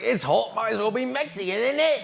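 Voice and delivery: put-on English accent. Mimicking a woman from the video in an English accent. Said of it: "you need to do one video where you speak English like this".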